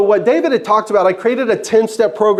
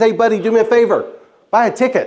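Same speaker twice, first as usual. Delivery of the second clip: usual speaking voice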